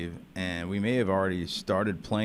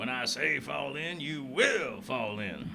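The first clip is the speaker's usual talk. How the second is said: play-acted drill sergeant voice, high, mild half-yell; 6 semitones higher, 4 dB quieter than usual. Recalling a funny sergeant from an old TV episode, yelling Sergeant Carter voice. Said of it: "like them yelling".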